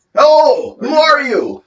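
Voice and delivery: very high, drawn-out, loud shouting. Voicing a guard calling down from the gate: guard shouting down. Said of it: "He shouts down".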